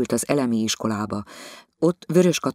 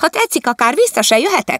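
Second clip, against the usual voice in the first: loud, whiny wail, pitched high; 14 semitones higher, 8 dB louder than usual. A wife jumps up and mimics Katica for her husband: whining imitation of Katica. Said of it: "Katica hangját utánozva sápítozott".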